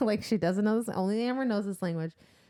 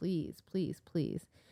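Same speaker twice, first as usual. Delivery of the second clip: soft, begging, pleading tone, repeated over and over; 4 semitones lower, 7 dB quieter than usual. Retelling a story scene where a woman begs a man, acting out begging. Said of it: "she's begging him".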